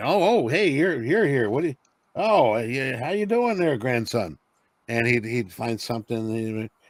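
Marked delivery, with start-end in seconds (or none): 0.0-4.4 put-on halting, high, stumbling old grandfather voice. Retelling how a grandfather greeted him on visits: imitating his grandfather. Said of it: "he'd come over and visit, and he'd be".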